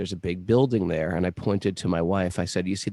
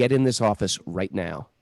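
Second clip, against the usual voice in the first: mock-harsh, put-on harsh woman's voice. Retelling how a woman ordered the speaker into her office: retelling a harsh command. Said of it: "spoke to me very harshly".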